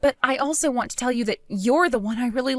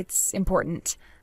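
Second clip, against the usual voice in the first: grave, serious tone. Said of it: "You sound so serious".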